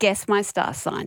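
ordinary talk, nothing marked

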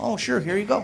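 very soft, meek voice.

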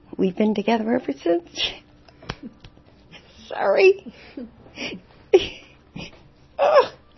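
voice breaking with tears, starting to cry. Recalling first noticing Pete after decades together: starting to cry. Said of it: "I'm crying already".

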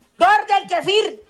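loud shouting. In a comedy routine, a performer just introduced calls out: shouting loudly. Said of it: "Perdón que el grite tan berrasco".

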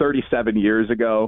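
plain

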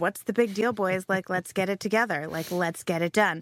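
ordinary talk

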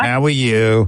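put-on New York accent. Contrasting the greeting as someone from New York would say it. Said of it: "if it was from New York, it'd be".

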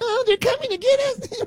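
put-on acted-out, very high crying-baby whine, babyish whimper. Mocking someone as hiding under a desk, mock crying like a baby. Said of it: "hiding under a desk crying like a little baby?".

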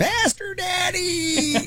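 very high squawking bird voice, "daddy" stretched. Joking about how they do it in that bird voice, kinky sex bird voice. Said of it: "Kinky sex bird voice sounds so much worse".

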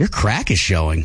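flirtatious come-on in a very low voice. Taking turns saying one phrase in set tones, the speaker says it flirty. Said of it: "Say it flirty".

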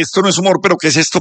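ordinary delivery

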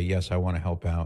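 ordinary delivery

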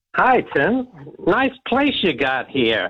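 put-on American-accented speech. Door-to-door campaigner greeting the resident, in an american accent. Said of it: "Why are you American?".

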